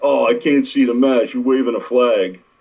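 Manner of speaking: griping, complaining voice. Recalling people who griped at him in the front row, mocking complaining people. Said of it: "I'd have people bitching at me for".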